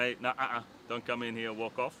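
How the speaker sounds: plain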